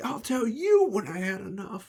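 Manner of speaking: put-on very high, rowdy drunken holler. Voicing a tavern patron answering the barmaid: yelling back. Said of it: "voices yelling back like".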